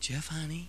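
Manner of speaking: barely-there, very soft, gentle murmur. Retelling how Mom woke him up: imitating mom's soft voice. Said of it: "Mom was soft".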